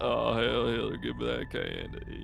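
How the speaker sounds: put-on old man voice with Southern accent. Joking about a stranger taking candy, in a Bill Clinton voice. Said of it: "They sound like Bill Clinton".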